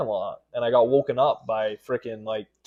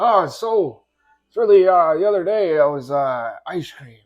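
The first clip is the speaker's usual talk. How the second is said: halting, stumbling ramble, loud and high-pitched; 5 semitones higher, 7 dB louder than usual. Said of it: "Now you're Biden. Do Biden".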